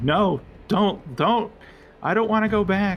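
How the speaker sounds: panicked, terrified pleading scream, very high, drawn out. Voicing a frightened sword that begs not to go back: screaming sword pleading. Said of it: "like, screaming".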